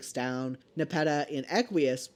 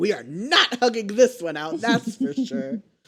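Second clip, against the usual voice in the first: put-on high-pitched, loud hollering; 6 semitones higher, 5 dB louder than usual. Recapping a story, the speaker acts out Karkat yelling at Gamzee. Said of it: "Karkat like yelling shit at Gamzee".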